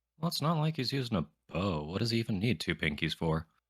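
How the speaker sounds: offhand, absent-minded mutter, half to oneself. A game master voices a character during the others' debate: muttering under breath. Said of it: "he just mutters under his breath".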